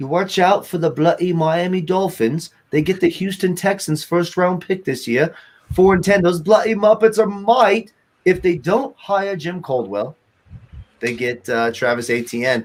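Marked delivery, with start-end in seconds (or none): 0.0-10.1 put-on British accent throughout, pitched up. Talking NFL draft picks, switching into a put-on British accent. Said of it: "I'll do a British accent".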